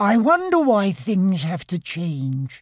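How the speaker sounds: plain murmuring delivery. Piglet walking home with Pooh through the moonlit wood, murmured. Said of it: "murmured Piglet".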